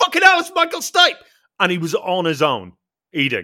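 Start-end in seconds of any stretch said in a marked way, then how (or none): 0.0-1.2 very high, loud, shrill, rushed, blurted-out shout. Recalling spotting a man eating alone at a restaurant, retelling a shout. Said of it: "I shouted".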